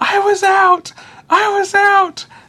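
play-acted, very high, slow, drawn-out screaming. Retelling the last scene of a movie: imitating a man screaming. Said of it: "he just starts screaming".

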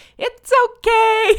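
very high, loud, cooing and soothing pet-talk yell. Speaker describes vacuuming while the cats flee, retelling a soothing cat-voice yell. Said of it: "yelling in my most soothing cat voice".

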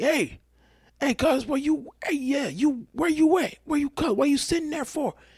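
shrill hollering yell, pitched very high. Telling how a man kept yelling at them during their order; retelling a man's yell. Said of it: "Yelling at me, like".

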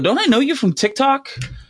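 high-pitched, shrill yell. Retelling a woman bringing food who yells through the window, retelling a yell. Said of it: "she yells through the window".

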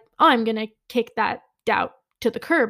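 ordinary talk, nothing marked

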